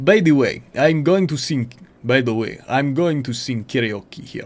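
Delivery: put-on Russian accent bending English. A player tries out a voice for the character: russian accent. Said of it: "Let me find Russian accent".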